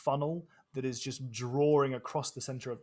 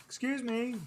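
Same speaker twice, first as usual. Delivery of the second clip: very high, theatrical stage yell; 11 semitones higher than usual. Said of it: "stage yelling".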